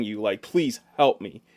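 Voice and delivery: ordinary talk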